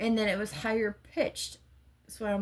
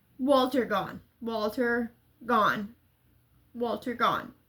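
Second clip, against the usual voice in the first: ordinary talk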